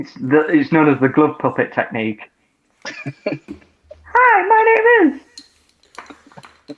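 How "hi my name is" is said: very high pitch with every word stretched out. Demonstrating the glove puppet technique, he introduces himself in a Mickey Mouse voice. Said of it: "he does the Mickey voice as well".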